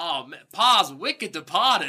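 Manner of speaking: heavily exaggerated Boston accent. Mocking how a character's accent comes and goes: Ren's Boston accent. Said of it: "Boston accent".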